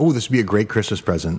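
plain

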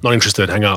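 ordinary talk

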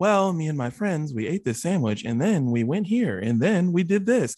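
affected, put-on storyteller narrator voice. Mocking how people recount outings with friends, in a mock narrator voice. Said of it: "talk in this like narrator voice that they don't have ... What is that voice?".

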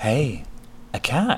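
sweet-sounding voice. Reading a story aloud, voicing Tifa Lockhart saying hello: sweet Tifa Lockhart voice. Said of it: "The sweet voice came from behind M C".

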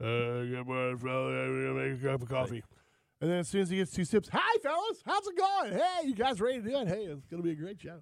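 sing-song cheesy radio voice. Imitating Glenn arriving for the morning show with his coffee, in his radio voice. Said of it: "some real Nuthugger radio voice you got right there".

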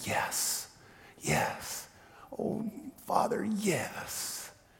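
faint, barely audible, very slow whisper. Retelling a mother answering a priest: imitating a barely audible whisper. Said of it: "now barely in a whisper".

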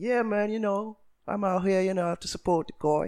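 clumsy fake English accent. Retell an exchange from after the media event, in a bad English impression. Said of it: "my worst English impression ever".

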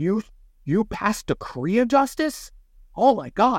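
very high, very slow, drawn-out freaked-out yell. Retelling how a teammate freaked out over a passed card: imitating someone yelling. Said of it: "yells at me".

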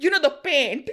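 high, put-on Indian accent. Telling a story, the speaker quotes a man asking a store worker for paint, Indian accent. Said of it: "an Indian accent that slips out with certain words".

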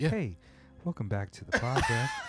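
sing-song, easy-listening radio host voice. Retelling how Tokyo Cliff opens his podcast: imitating Cliff's easy listening voice. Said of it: "the real, like, easy listening voice".

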